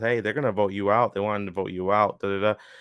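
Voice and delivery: ordinary talk, nothing marked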